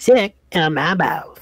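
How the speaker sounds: put-on cartoon kid voice. Voicing a little creature that keeps repeating itself, in a Cartman voice. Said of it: "you give it like a Cartman voice".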